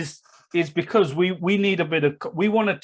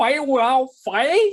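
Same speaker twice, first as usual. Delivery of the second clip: high-pitched, twangy accent; 8 semitones higher, 3 dB louder than usual. Repeating a quoted line the way it must be said, with the Bruce Lee twang. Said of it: "You have to say it with the Bruce Lee twang".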